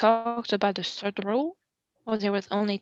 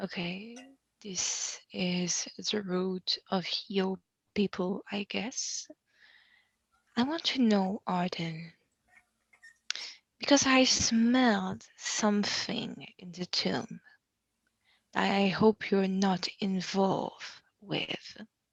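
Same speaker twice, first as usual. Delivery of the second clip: soft, half-whispered aside; 6 dB quieter than usual. Voicing a character who questions Arden about the tombs: half-whispering to Arden. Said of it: "and I'm whispering to him".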